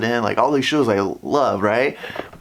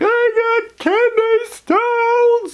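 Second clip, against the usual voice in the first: put-on very high, dragged-out scream; 4 dB louder than usual. Recalling a lady next to the speaker in the ER: imitating a lady screaming. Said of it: "and she's screaming".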